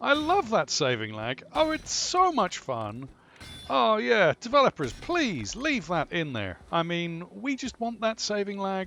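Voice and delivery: facetious over-sold gushing, sing-song fake enthusiasm. Player talking to the developers about the saving lag, sarcastic mock enthusiasm. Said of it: "I am being facetious".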